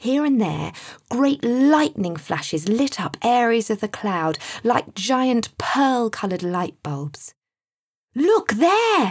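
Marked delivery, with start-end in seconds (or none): 8.2-9.1 shrill, very high, loud shout. Narrator reads Sam's exclamation to his companions: shouted. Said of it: "shouted Sam".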